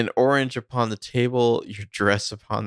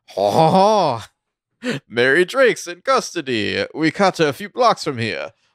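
loud, swooping, comic put-on French accent; 7 semitones higher, 5 dB louder than usual. Retelling a scene as a French cop: imitating a French accent. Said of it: "French cop with a French accent is just like".

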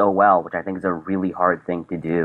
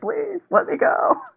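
put-on, very high, terror-filled voice. Quoting a favourite line from an episode: imitating Jack Quaid's terrified plea. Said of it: "the terror in his voice".

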